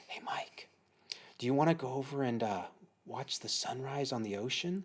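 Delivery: soft, quiet, hushed whisper. Retelling how the wife woke him early: imitating a whisper. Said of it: "comes over and whispers to me".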